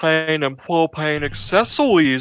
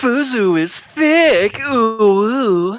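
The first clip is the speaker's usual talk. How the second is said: sweet cutesy uwu-style cute voice; 5 semitones higher than usual. Granting a requested line from the chat, said in a cutesy uwu voice. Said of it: "Can you say Fuzu is thick in an uwu voice?".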